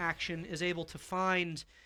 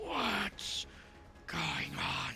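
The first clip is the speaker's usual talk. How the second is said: very hoarse, rough-throated, hushed, rasping devil voice; 6 dB quieter than usual. Voicing the bearded devil as it watches the battlefield, very hoarse voice. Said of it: "in a very hoarse voice".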